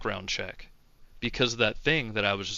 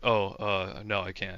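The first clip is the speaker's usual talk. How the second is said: put-on quiet voice, quieter; 2 semitones lower, 4 dB quieter than usual. Retelling a coworker's answer about working the event: imitating someone going quiet. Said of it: "he got really quiet all of a sudden".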